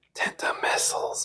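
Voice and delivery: hushed, breathy, secretive whisper, barely voiced. Saying a weapon name again after forgetting the bit: whisper voice. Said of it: "I forgot to do my, um, whisper voice".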